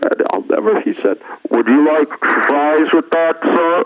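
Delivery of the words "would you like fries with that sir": strange, alien, foreign-sounding voice. Retelling what the Wendy's drive-thru worker asked him, strange, alien, foreign voice. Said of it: "with that strange, alien, foreign voice".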